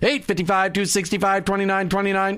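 rapid, rattled-off auctioneer patter. Host repeats the show's phone number for callers, in an auctioneer voice. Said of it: "I'm always going to do it that auctioneer phone, that voice".

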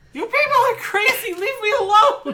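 crying in very high voice. Voicing a character crying in her bedroom at the others: crying. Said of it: "you can hear her crying in there".

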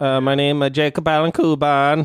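playful, joking put-on Italian accent. Introducing himself to the audience at the end, joking italian accent. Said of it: "I went Italian there for a minute".

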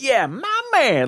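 giddy, super excited, very high whoop. Retelling a man's reaction inside a simulation, mock super excited. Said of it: "He's like super excited".

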